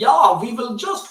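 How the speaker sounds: poor put-on German accent. Speaker quoting what the Germans said at the invasion's start, in a bad German accent. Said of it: "my German accent's terrible".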